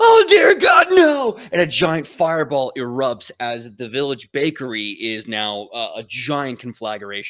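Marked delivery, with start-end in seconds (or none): 0.0-1.4 very high, very loud, drawn-out panicked cry. Voicing a villager crying out as the bakery bursts into flames: panicked villager cry. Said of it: "you hear this voice going".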